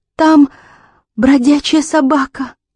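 quavering, shaky delivery. Narrating a woman's reply to two people peering round a corner, trembling voice. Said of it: "дрожащим голосом ответила Аманда".

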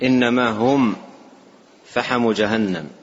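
normal talking voice

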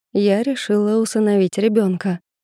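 plain

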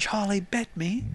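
put-on little child's voice. Echoing a friend's joke about a famous video, Charlie Bit Me kid voice. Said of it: "Sounds like that kid from that one video".

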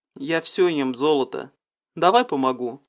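ordinary delivery

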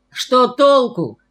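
high-pitched, half-shouted outburst. A man replies to another man sipping tea, almost shouting. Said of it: "почти крикнул Львов".

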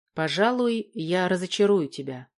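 ordinary delivery

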